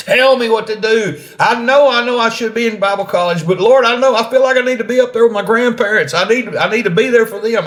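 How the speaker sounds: imitated shouting. Retelling yelling at god over a deafening machine: retelling a yell at god. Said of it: "yelling at the top of my lungs".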